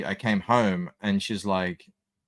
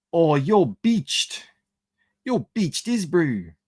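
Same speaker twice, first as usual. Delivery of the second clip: put-on New Zealand accent, much higher; 8 semitones higher than usual. Quoting an old video to the listeners, doing a new zealand accent. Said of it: "that's a real accent that people have there".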